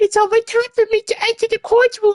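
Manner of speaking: put-on pitched very high, young-sounding voice. Reading a game character's line aloud: younger character voice. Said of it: "maybe I should do a younger voice".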